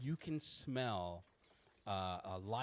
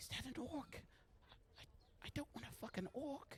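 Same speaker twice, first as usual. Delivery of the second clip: loud indiscreet whisper, higher; 8 dB quieter than usual. Voicing a woman in a parlor trying to whisper discreetly but failing: loud failed whisper. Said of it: "You can hear her whisper".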